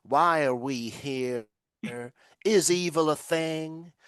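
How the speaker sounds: silly, ridiculous put-on American accent. Mocking a tedious sixth form philosophy student, in a ridiculous American accent. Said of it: "in this ridiculous American accent".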